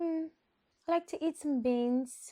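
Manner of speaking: put-on English accent, high pitched, very slow, drawn out. Describing her characters' voices, doing Rebecca's English lady voice. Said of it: "she just an English lady".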